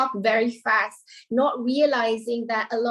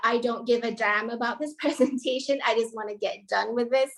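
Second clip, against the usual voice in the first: ordinary talk, nothing marked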